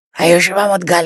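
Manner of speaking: rasping, very hoarse voice. Speaker recalls a gentleman who always phoned from one north indian city, imitating a caller's hoarse voice. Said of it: "in a very hoarse voice".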